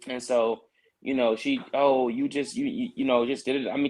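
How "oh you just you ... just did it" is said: put-on angry ranting voice. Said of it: "just going off".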